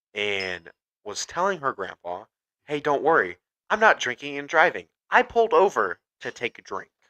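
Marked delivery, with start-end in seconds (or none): 2.7-6.9 completely sincere, straight-faced, dead serious, earnest tone. Retelling a phone call to her grandpa from the roadside: imitating a dead serious tone. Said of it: "she very dead seriously said that".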